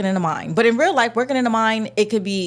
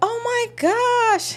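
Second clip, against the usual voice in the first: very high, sweet, soft feminine coo, "gosh" drawn out; 13 semitones higher than usual. Retelling how the first heroine's voice sounded: imitating a soft feminine voice. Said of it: "her voice was, like, all soft".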